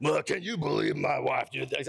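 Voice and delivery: rough, creaky griping, complaining. Acting out a husband complaining to his friends: imitating a complaining husband. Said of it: "I make fun of the guys too".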